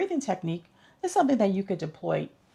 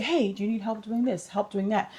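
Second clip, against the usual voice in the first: normal talking voice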